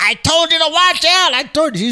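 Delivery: put-on woman's screaming. Retelling how the man's companion screamed at him, retelling a woman's screaming. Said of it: "was screaming".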